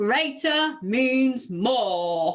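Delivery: big, hulking giant voice, words drawn out. Modeling the rule for listeners to repeat, in a giant voice. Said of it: "can I hear your best giant voice as you say greater means more?".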